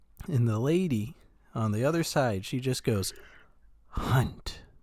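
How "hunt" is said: imitated whispery tone. Retelling a dream where a lady on the phone speaks: imitating a whispery tone. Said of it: "very whispery tone".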